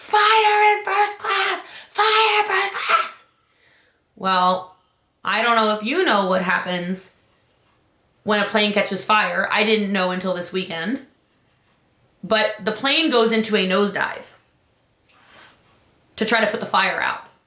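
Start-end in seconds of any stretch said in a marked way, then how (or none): 0.0-3.2 high, slow, drawn-out scream. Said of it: "the flight attendant screams".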